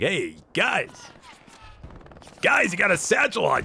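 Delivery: play-acted, high, swooping yell. Commentating a match, the speaker imagines what a player shouted: imitating Abby Bear yelling. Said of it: "I have to imagine Abby Bear was yelling".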